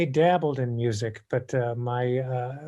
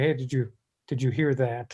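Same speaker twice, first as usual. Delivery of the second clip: ordinary talk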